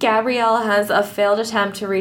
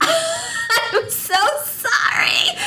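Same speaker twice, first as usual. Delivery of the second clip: very high, drawn-out, laughing delivery. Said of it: "she's just like".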